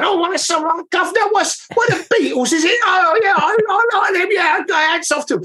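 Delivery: put-on very high-pitched Cockney accent voice. Imagining a passerby's reaction, in a cockney window cleaner accent. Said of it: "like a Cockney window cleaner walking past".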